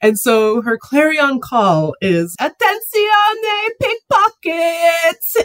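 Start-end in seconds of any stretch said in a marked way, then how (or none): 2.4-5.5 put-on woman screaming, higher pitched. Retelling the catchphrase of Monica Poli: imitating Monica Poli screaming. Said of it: "screaming at the top of her lungs".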